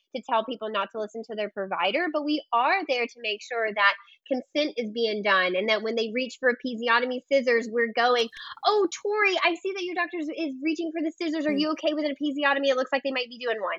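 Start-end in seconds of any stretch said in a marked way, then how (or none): 8.6-13.8 quick, rushed, pitched-up delivery. Demonstrating how to alert a birthing client as the scissors come, said fast. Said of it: "I have to say it just fast like that".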